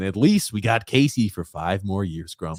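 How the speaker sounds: ordinary delivery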